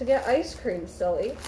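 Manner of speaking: ordinary talk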